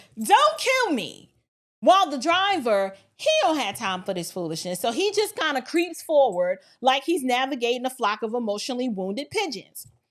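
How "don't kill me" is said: put-on, high screaming cry. Retelling what a woman blocking a truck's path screamed, mock screaming.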